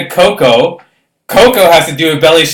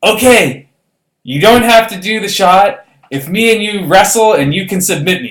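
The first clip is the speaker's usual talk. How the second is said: abrupt, sudden, blurted yell; 4 semitones higher than usual. Retelling what Coco yelled at a breaking point: imitating Coco yelling. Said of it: "Coco yells".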